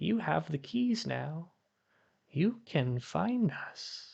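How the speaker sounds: faint, small, high-pitched half-whisper. Narrating a small voice in the back of the mind, small half-whispering voice. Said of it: "kind of whispers".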